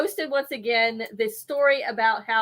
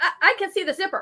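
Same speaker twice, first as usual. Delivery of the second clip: acted loud, high child's voice, blurted out; 8 semitones higher than usual. Retelling a child's remark at an Easter brunch: imitating a child saying it loudly. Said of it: "saying it so loud".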